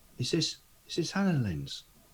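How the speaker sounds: soft, hushed voice. As Gulliver turning to ask another character a question, in a hushed tone. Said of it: "a hushed tone rather than sort of like his normal voice".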